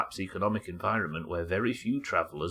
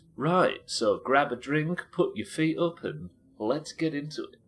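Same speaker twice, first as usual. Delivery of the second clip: mocking, heavily sarcastic vlogger voice, raised high; 7 semitones higher, 3 dB louder than usual. Before starting a town's history, speaker mocks a common YouTuber intro: sarcastic YouTuber-intro impression. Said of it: "I'm doing it sarcastically".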